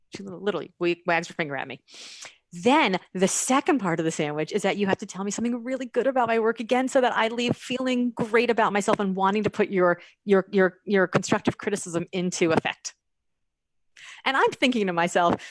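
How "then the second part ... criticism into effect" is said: normal talking voice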